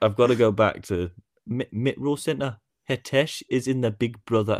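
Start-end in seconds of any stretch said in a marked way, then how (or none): 2.9-4.6 fake, poor Geordie accent, drifting way off. Retrying the line after the first attempt was called bad, bad Geordie accent. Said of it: "You went far off that time".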